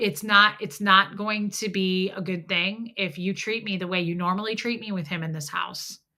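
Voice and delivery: ordinary talk, nothing marked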